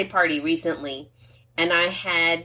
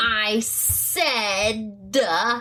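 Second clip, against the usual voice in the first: mock angry teen voice, frustrated, higher; 4 semitones higher than usual. Retelling the daughter's reply when asked to repeat herself: imitating a frustrated daughter. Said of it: "I can see the anger coming out".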